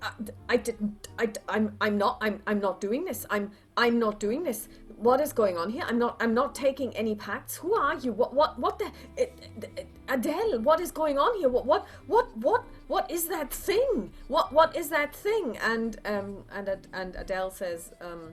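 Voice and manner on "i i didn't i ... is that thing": very nervous stammer, higher, louder, faster. In a drama scene, a character is confronted about trading lives in a pact: very nervous stammering voice. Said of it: "you hear a very nervous voice saying".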